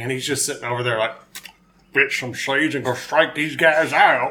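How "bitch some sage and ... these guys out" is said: put-on Texan accent. Imitating a pitcher sitting alone in the dugout: Texan Nolan Ryan impression. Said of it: "Is that your best Texan impression?".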